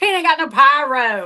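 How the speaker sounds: heavy put-on southern drawl, pyro drawn out. Retelling an angry fan at a wrestling show: imitating a thick southern accent. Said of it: "the most southern accent".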